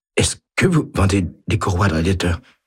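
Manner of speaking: feeble, fast, weak, terrified croaking voice. A young man finally manages to speak in front of a witness, weak terrified croak. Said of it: "d'une voix faible et terrifiée qui ressemble à un croassement".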